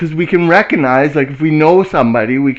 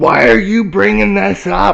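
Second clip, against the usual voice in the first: mock angry, pitched-up rough outburst; 5 semitones higher than usual. Retelling how the dad reacted to showing a photo: imitating an angry dad. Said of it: "he gets all mad and he goes".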